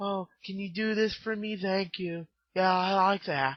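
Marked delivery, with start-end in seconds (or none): 0.0-2.3 put-on very hushed, soft, gentle, kindly old-man voice. Describing a horror film's nice old man asking a favour, imitating a gentle old man. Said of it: "he has a gentle voice like".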